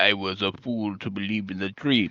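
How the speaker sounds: low, soft put-on Dutch accent. Retelling Van Damme's answer to his buddy about retirement, in Van Damme's Dutch accent. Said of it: "in his Dutch accent".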